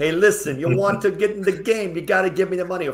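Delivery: loud, terrible put-on mafia accent. Speaker imagines someone calling a buying team to demand money, really bad mafia voice. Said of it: "with my really bad mafia voice".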